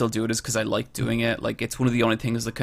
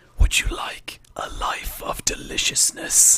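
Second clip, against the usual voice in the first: slow, drawn-out, sultry whisper. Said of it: "he whispers".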